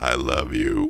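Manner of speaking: very low, deep talking frog voice. The storyteller voices a big red frog speaking to the listeners, talking frog voice. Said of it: "as its throat sac fills".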